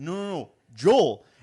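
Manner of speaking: put-on slow, drawn-out Wisconsin accent. Retelling the teammate repeating his name: imitating Joel's Wisconsin accent. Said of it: "that's my only accent story".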